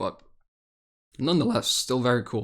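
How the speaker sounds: breaking, cracking voice mid-phrase. Talking about a new skin, the voice cracks: voice crack. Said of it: "That was a voice crack".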